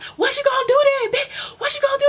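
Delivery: shrill, very high, loud, acted-out screaming. Retelling a friend screaming at a girl through a door: imitating someone screaming. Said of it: "She starts screaming at the girl through the door".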